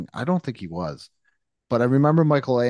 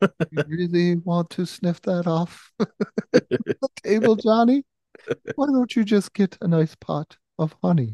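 put-on higher, pitched-up children's cartoon bear voice; 7 semitones higher than usual. Imagining Winnie the Pooh warning Johnny off drugs, Winnie the Pooh impression. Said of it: "That's my Winnie the Pooh impression".

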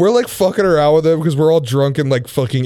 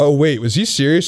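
plain

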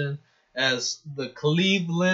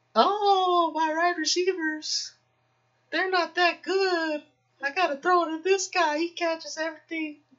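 very high put-on voice, stretched long oh. Giving a friend a hint about an elite tight end, in a Lamar Jackson voice. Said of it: "That was my Lamar Jackson voice".

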